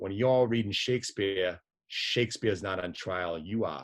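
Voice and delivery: put-on Boston accent. Quoting a priest who answers a mocking student, imitating a Boston accent. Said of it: "with his Boston accent".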